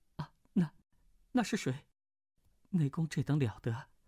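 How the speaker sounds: shaky, trembling, quavering delivery. Narrator voicing Mu Wanqing after a howl from the cliff, in a trembling voice. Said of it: "颤声道".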